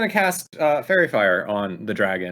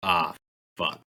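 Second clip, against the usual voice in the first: muttered under breath, lower pitch; 3 semitones lower, 4 dB quieter than usual. Narrating a game, a player voices their character's reaction, muttered under breath. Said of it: "He just goes under his breath".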